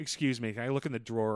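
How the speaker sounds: plain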